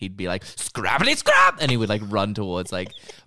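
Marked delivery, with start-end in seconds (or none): 0.4-1.6 excited, pitched-up, loud cry. Showing the junker's catchphrase when he was excited: excited Neelix voice. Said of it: "if he was excited".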